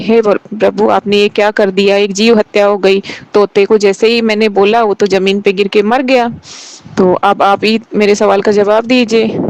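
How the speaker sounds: usual speaking voice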